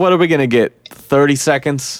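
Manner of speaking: ordinary talk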